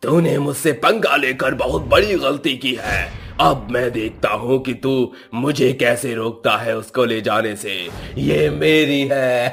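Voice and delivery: held-back, high, mild ghost roar voice. Voicing a ghost after a stone hits it: loud roar. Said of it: "तभी वो भूत जोर से चिंघाड़ता है".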